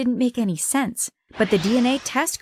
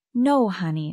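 plain reading voice

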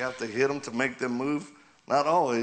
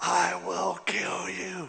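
angry, high, rough little demon voice; 6 semitones higher than usual. Retelling a man changing during prayer, imitating an angry little demon. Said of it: "He was an angry little demon".

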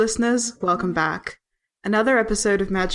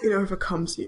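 mock-solemn, quieter; 5 dB quieter than usual. Repeating the other speaker's words back to them, mock-solemn. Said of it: "the solemnity with which you said that".

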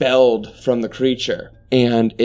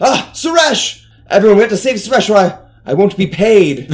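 high, raised voice calling out; 8 semitones higher, 5 dB louder than usual. A game master voicing Dalton, who calls over to everyone: Dalton calling out. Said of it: "Dalton calls over and he's like".

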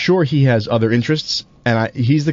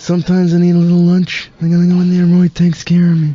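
loud, pitched-up, booming mobster boss voice; 7 semitones higher, 5 dB louder than usual. A speaker talks about the Godfather Sub at Roy's: Godfather impression. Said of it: "an impression".

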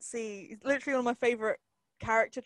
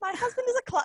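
very high, loud, fudged fake English accent; 12 semitones higher, 5 dB louder than usual. Imitating an American actress fudging an English accent: Winona Ryder's fudged English accent. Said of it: "an American doing an English accent".

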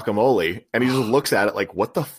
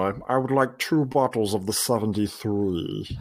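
bad put-on voice, slow and drawn out; 3 semitones lower, 5 dB quieter than usual. Retelling a scene where a character orders wine: terrible Alan Rickman impression. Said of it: "Your Alan Rickman is terrible".

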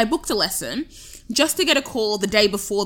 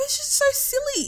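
laughing, pitched-up speech with words bubbling through; 4 dB quieter than usual. Retelling the phone call to mum: imitating own laughing while upset.

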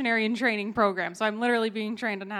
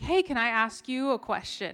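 non-native, broken English phrasing. Retelling how a woman across the table asked a question: imitating broken English. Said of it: "in broken English".

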